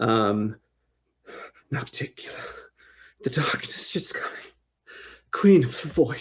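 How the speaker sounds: muttered put-on voice. A game master voicing a rocking character, Nolgeteim muttering under breath. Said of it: "kind of under her breath".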